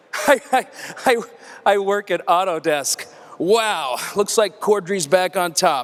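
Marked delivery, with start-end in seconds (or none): none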